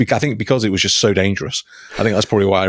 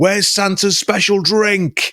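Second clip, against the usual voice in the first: mock, shrill, very high-pitched shout; 11 semitones higher than usual. Retelling how a man on a boat shouts to the captain, retelling a shout. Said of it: "then he shouts to the captain".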